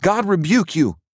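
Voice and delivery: shouted, pitched very high. Standing to his feet, a man shouts at a woman with a broomstick. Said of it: "he shouted".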